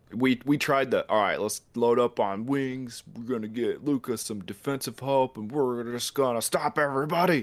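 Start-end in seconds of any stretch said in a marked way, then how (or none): 1.1-7.5 all-knowing deity voice. Voicing a team's front office planning its offseason: front office deity voice. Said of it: "the front office deity voice".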